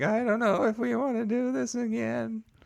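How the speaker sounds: very high, quavering, uncertain, wavering voice. Imitating news hosts on the phone with the president: imitating wavering voices. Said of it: "voices are w-, wavering".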